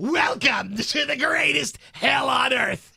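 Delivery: very slow, loud, high, creaky, creepy haunted-house voice. Repeating a line from last night's haunted house in a scary voice. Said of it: "Let's hear Scary's voice from last night".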